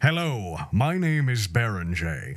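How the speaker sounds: authoritative voice. Showing how the processed voice sounds: commanding voice. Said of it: "very, like, commanding".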